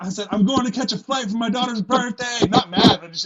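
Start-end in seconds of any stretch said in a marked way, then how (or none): 0.3-2.5 easygoing, raised, pitched-up yell. Retelling his reply, shouted back while leaving: retelling his own yell. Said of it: "I'm yelling".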